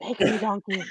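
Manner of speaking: put-on whisper. Imagining someone whispering in the middle of the night: imitating Tracy whispering. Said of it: "Tracy will be whispering".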